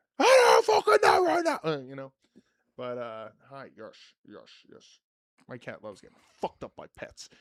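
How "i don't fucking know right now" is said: put-on loud, very high shouting. Quoting Tommy from a show being watched: imitating Tommy yelling. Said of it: "especially when he's yelling".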